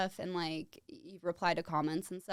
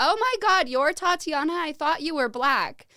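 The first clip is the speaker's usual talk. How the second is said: shrill, very loud scream; 9 semitones higher, 10 dB louder than usual. Retelling how a girl from her pledge class greeted her, imitating her scream. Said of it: "she just screamed at me like".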